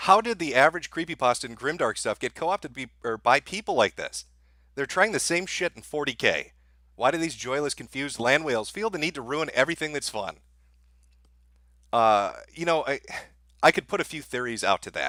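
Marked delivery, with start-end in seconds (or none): none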